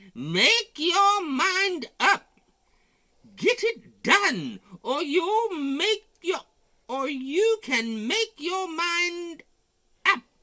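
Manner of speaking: very high, loud, shrill yell. Reading a story aloud, voicing the super hunch: yelling as the super hunch. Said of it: "some super hunch was yelling".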